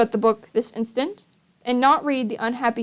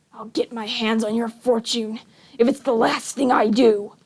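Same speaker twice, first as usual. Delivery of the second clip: venomous, menacing hiss. Narrator reading a figure whispering a threat in someone's ear: hissed threat. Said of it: "the voice hissed".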